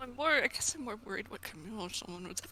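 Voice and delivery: very quiet, indistinct muttering under the breath. Voicing a character who lets a worried thought slip: mumbling. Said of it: "he mumbles".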